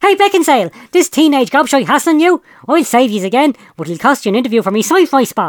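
piercing, shrill, high shout, acted. Narrator reads the Gobbler shouting as he jumps out of his 4x4: Gobbler's shrill shout. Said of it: "unmistakably shrill voice of the gobbler".

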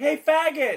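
shrill yell pitched very high. Playing a character who yells at a cop before throwing a rock: in-character yell. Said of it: "I just yell".

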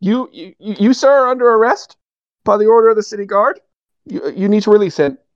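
shaky high-pitched voice. A narrator voices a new city guard ordering an arrest; shaky, high-pitched new guard. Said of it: "shaky, high-pitched, new-to-the-guards kind of voice".

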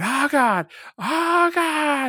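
very high, very slow, shrill, drawn-out wail of pain. Describing a wrestling match, acting out Flair in pain: imitating Flair's shrill agony scream. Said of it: "like shrill agony scream".

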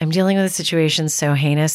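dead, flat, lifeless monotone. Retelling what the speaker said back, in a dead, flat Kardashian voice. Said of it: "with my dead voice, come to think of it, it's kind of a Kardashian voice".

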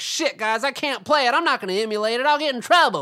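cartoon kid voice, dead on. Mid-rant, acting out someone afraid of getting in trouble: Butters voice. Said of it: "that was a fantastic butters".

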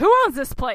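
very loud, entitled, demanding voice. Likening someone's questioning tone, the speaker imitates a mom demanding the manager. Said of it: "sort of like a mom who's demanding to see the manager".

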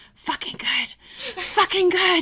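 put-on very high, childlike stage whisper. Retelling how a son repeated a word to himself: imitating a child whispering. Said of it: "he started whispering to himself over and over".

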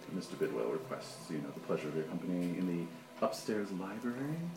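hushed, soft butler voice. The narrator voices Bidwell's butler addressing the group, in a hushed butler voice. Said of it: "sort of in a hushed voice".

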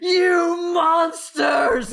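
acted furious screaming. Voicing a rider who tumbles up and chases them: screaming in character. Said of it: "just screams".

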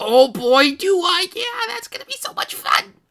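thrilled, excited gush, high, loud, voice breaking. Voicing Leon accepting an invitation to stay the night: excited, voice cracking. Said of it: "his voice just, it cracks".

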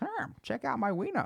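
very high cartoon puppet frog voice. Retelling a video of a girl and Kermit the Frog, Kermit with a cucumber: Kermit the Frog voice. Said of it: "And then he picks up a cucumber and he goes".

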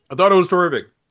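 muffled full-mouth speech. Answering a question about the day, talking with food in mouth. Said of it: "you got food in your mouth again?".

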